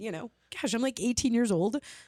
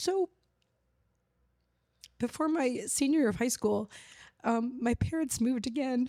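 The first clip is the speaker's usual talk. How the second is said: tearful, crying, emotional voice. Speaking to Lou after getting emotional, the speaker talks while crying. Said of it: "I don't know why I'm crying so much".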